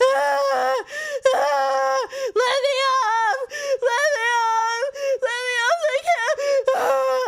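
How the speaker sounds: acted crying and begging. Retelling begging to be let off a camel, imitating own sobbing plea. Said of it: "I was like crying like that".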